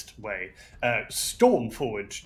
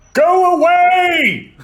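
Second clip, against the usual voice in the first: stern, fierce, very high, very loud, shrill teacher yell; 18 dB louder than usual. A player, as Rock, yells at a large creature in a fierce teacher voice. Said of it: "just in his fiercest teacher voice, yells".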